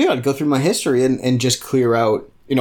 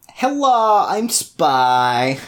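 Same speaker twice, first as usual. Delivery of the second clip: put-on vaguely European spy accent, spy drawn out; 4 semitones higher than usual. Showing how an unmasked spy talks in their murder mysteries, vaguely european accent. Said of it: "they then have the accent of the place".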